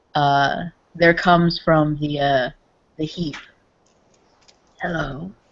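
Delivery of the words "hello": rusty, long-unused voice. A figure from the heap speaks after a long silence, rusty, unused voice. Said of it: "in a voice that uh, hasn't uh, hasn't spoken in a long time, like uh, trying to remember how to communicate uh, using vocal cords".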